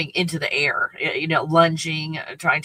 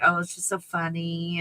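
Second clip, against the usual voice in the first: mock speech while laughing through the words; 4 dB quieter than usual. Retelling how she reacted while the dogs fought: imitating someone laughing. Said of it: "she was laughing, like".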